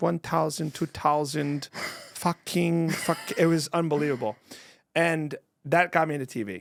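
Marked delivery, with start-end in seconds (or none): 0.0-3.2 put-on German accent. Imitating a teacher counting in thousands: imitating Miss Steck's German accent. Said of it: "let's just say she was German".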